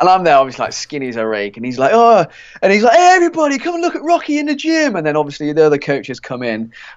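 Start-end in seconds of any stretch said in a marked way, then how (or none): 3.0-5.0 very high-pitched, jeering, taunting mockery. Retelling a goalkeeping coach teasing them in the gym: imitating a coach mocking. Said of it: "having a go".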